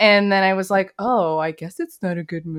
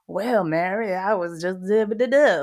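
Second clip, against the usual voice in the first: fake Southern US drawl. Describing how an actor always sounds, doing Matthew McConaughey impression. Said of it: "with the accent".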